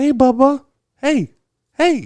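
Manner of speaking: put-on very high, slow, sweet old-lady cooing. Retelling how an old lady in a grocery store greeted a baby: imitating a sweet little old lady. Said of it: "it was a sweet little old lady today".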